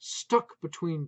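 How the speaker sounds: ordinary delivery, nothing marked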